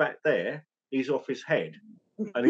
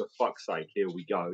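muttering under breath, much lower, quieter; 7 semitones lower, 7 dB quieter than usual. Speaker retelling what they said behind their mask, retelling muttering under breath. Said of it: "So under my breath".

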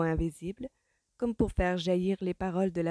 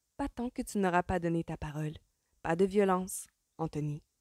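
plain

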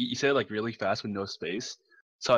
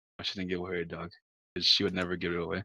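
usual speaking voice

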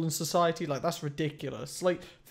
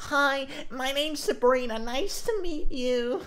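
very high woman's voice, slow, drawn-out words; 10 semitones higher than usual. Reacting to her greeting, imitating her voice. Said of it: "her voice".

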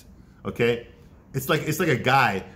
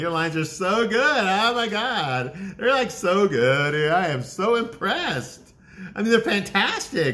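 mock-sarcastic delivery, much higher pitch, woman's voice; 8 semitones higher than usual. Speaker acting out a woman's reply to a man, imitating her sarcasm. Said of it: "Obviously, she's being sarcastic".

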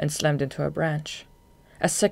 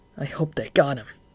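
vindictive, vengeful, spiteful tone. A character, after losing sight of Throbb in the fight, speaks: vengeful. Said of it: "he said vengefully".

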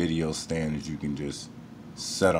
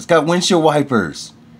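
very loud, high-pitched, thrilled, excited shout; 12 semitones higher, 12 dB louder than usual. Talking to viewers about the mouse on screen, yelling. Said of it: "Sorry for yelling".

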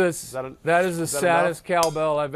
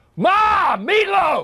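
raging yell, much higher and louder; 5 dB louder than usual. Showing another speaker how to yell the line at Mom: raging yell. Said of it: "this guy had some rage".

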